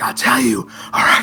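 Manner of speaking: whispering really loudly. A suspicious character confides his doubts about a dwarven lady, in a loud stage whisper. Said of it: "whispering really loudly".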